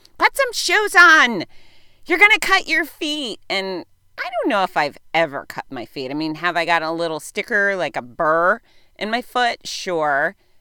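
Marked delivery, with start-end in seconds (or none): 0.2-3.4 very high, shrill, loud screaming in a scolding tone. Retelling a childhood memory of mom: imitating mom screaming. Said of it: "my mom was always screaming".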